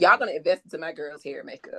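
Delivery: ordinary delivery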